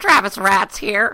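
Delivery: put-on gremlin voice, very high, shrill, very loud. Introducing yourself as the podcast gremlin: put-on gremlin voice. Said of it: "Is that what a gremlin sounds like".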